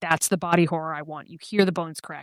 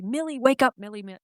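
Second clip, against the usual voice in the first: put-on, high-pitched screaming; 7 semitones higher than usual. Describing an actor's hallway scene, imitating someone screaming. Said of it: "he's screaming".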